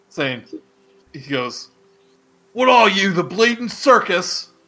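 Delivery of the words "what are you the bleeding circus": loud, pitched-up, bewildered orc yell. A bewildered orc yells out at the group arriving, orc yelling out. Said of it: "he yells out".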